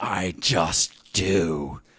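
put-on British accent, sneering and dismissive in tone. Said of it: "in this British sneer".

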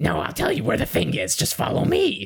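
shady, gross, high, creaky sleazy voice. Showing the voice of a shady character who lures people: shady gross character voice. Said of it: "every time you see a shady character".

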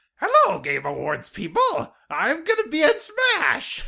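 very high, very loud, squeaky, swooping cartoon voice. Quoting a character's trailer line: Agumon voice. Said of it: "he has the same voice from the original Digimon dub".

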